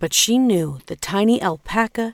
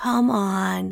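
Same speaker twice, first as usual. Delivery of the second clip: weary, tired. A narrator reads Pachma speaking to the alpaca, weary. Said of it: "she said wearily".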